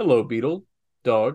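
put-on very fancy, refined voice. Imitating how this guy addressed them: imitating a very fancy voice. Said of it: "very fancy".

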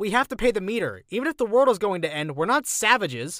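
high, loud yelling. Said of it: "I yelled back".

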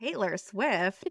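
very slow, drawn-out American accent. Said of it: "say this".

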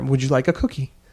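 mock condescending, talking-down tone. Retelling what one of the wives asks the handmaid: imitating a condescending tone. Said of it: "In a very kind of condescending".

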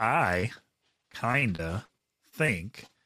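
each word read very slowly, drawn out. Asked by a co-host to read the listener letter again, reading very slowly. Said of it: "Read it again. Slowly".

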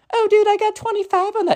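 put-on very high, girlish voice. Retelling a group call, quoting the Gen Z kid's answer in a girl voice. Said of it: "In the girl voice".

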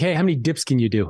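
ordinary delivery

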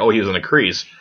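normal talking voice

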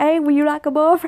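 put-on Vietnamese accent in English. Mocking how Vietnamese people talk in a joke: imitating Vietnamese speakers' accent. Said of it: "that's why they talk like".

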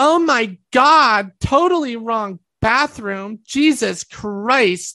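mock shouting, slow, drawn-out, full volume. Retelling a stranger yelling in a crowded bathroom line: imitating someone yelling. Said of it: "she yells at the top of her lungs".

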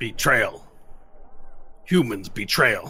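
fractured speech with broken grammar. Narrating the scene, the speaker answers the party as Diptac, in Diptac's very broken Common. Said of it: "He says it in common very broken".

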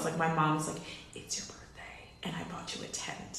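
unvoiced, hushed whisper.

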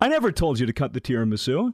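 normal talking voice

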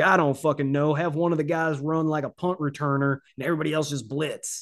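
put-on Southern accent. Imitating a defensive coordinator calling blitzes: Greg Williams with Southern accent. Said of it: "you gave Greg G-, G-, G-, a Southern accent".

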